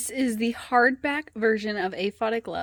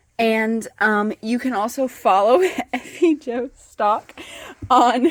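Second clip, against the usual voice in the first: loud, laughing through the words; 6 dB louder than usual. Speaker giving an author's Instagram, laughing while talking. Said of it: "I'm sorry, I'm laughing".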